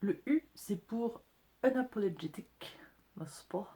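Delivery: put-on English accent. A french speaker explaining what the letter u stands for, in an english accent. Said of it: "Magnifique accent anglais".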